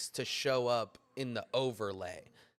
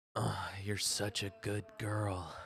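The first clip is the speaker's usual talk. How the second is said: playful, put-on seductive bedroom voice; 3 semitones lower, 4 dB quieter than usual. Trying to get a wife's attention in the background: put-on smut voice. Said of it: "let me put on my smut voice".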